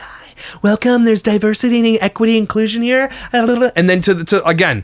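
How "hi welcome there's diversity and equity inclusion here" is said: very feminine, pitched-up high voice. Imitating an influencer's earlier welcoming manner: very feminine voice imitating Michaela Noguera. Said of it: "she was very feminine, very like".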